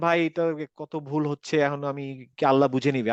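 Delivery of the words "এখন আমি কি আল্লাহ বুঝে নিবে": ordinary talk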